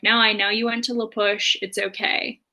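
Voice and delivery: ordinary talk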